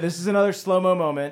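plain

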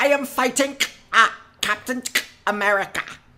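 put-on voice, very high and loud. Playing a German who has come into the house: Arnim Zola voice. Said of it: "You are Arnim Zola".

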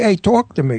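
strong, native-sounding New York accent. Showing how someone from new york says the phrase: new york accent. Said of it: "But if you're from New York, you say".

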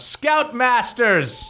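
high, drawn-out, slow yell. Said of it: "yells out".

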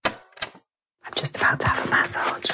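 hushed whisper. Recording a voice note just before a massage, whispering. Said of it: "I'm whispering because it's very plinky plonky".

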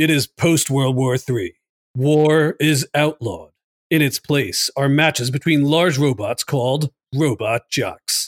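dramatic, epic movie-trailer announcer narration. Reading the plot summary of a movie on a list in a movie-trailer voice. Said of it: "Let's do the movie voice for this one".

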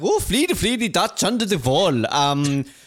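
mock Swedish accent. Mimicking how people react to a dutch myth, speaker uses a mock swedish accent. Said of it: "very Swedish of you".

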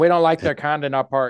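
slow, measured, deliberate, drawn-out delivery. Joking about a park banning people, in an Oliver Peck impersonation. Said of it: "That was my best Oliver Peck impersonation".

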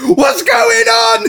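very high, loud, hoarse, ragged shriek. Retelling how a doctor came running in at the hospital, retelling a scream. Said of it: "A doctor comes in about 20 seconds later screaming".

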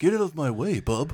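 laid-back surfer dude voice. Imagining Keanu Reeves playing Wolverine: Keanu Reeves surfer dude voice. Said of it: "some surfer dude".

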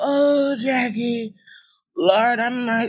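very slow, doleful, mournful sad voice. The speaker describes how the aunt always talks, imitating her sad voice. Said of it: "She's a very sad sounding woman".

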